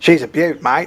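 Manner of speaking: put-on Australian accent. Describing a pose and quoting the way he talks: Steve Irwin impression. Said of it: "I'm gonna take a Steve Irwin pose".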